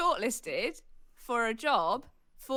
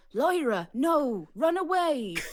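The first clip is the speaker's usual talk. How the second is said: put-on accent from Norfolk; 3 semitones higher, 5 dB louder than usual. Repeating a line once heard on a TV show, in a Norfolk accent. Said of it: "That's that's like a Norfolk accent".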